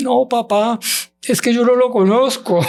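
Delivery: very high, weeping, pleading voice. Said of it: "¿por qué estás llorando?".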